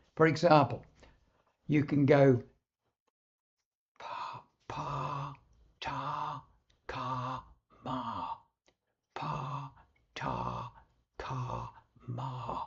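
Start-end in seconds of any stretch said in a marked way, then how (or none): 4.0-12.7 hushed, very soft, very slow syllable drill. Demonstrating a daily voice exercise of repeated syllables in a very soft voice. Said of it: "in a very soft voice".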